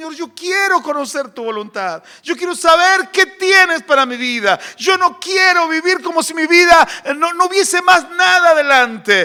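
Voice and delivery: high, tearful, pleading, put-on crying. Recalling praying to know God's will, the speaker re-enacts it: retelling a tearful prayer. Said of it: "le lloraba a Dios y decía".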